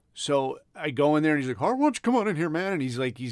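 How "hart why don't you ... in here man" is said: quick, high small-town animated sitcom voice. Retell how a man with a nervous twitch called you in, in a King of the Hill voice. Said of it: "he talked like King of the Hill".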